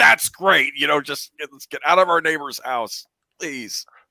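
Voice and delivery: half-yelled, restrained, mild pleading yell. Describing a film scene, imitating Tom Hanks yelling. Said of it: "I love the way Tom Hanks yells".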